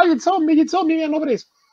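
very high, shrill mock shriek of panic. Retelling how a friend screamed at everything during a zombie game: imitating a friend screaming. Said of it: "c'era lei che urlava".

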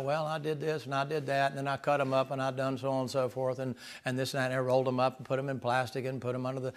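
put-on utterly deadpan, soft, flat, matter-of-fact delivery. Retelling what an interviewed man said, imitating a deadpan interviewee. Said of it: "he's just as deadpanned as you can imagine".

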